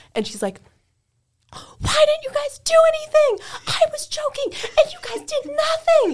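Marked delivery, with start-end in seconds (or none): 1.5-6.1 acted-out, very high-pitched, shrill yelling. Retelling how a woman at work started yelling at them, retelling a yell. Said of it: "she starts yelling at us".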